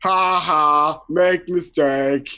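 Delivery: dim laughing brute voice, very slow. Narrating a tabletop scene, the speaker voices Hank pointing at another character: Hank laughing. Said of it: "Hank says, pointing at George and laughing".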